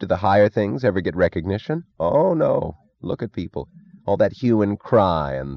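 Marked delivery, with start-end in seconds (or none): none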